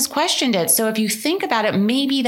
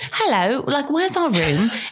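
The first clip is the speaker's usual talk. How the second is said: fake English accent throughout; 3 semitones higher than usual. Retelling checking into a honeymoon hotel, speaking in a put-on English accent. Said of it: "I only spoke with an English accent".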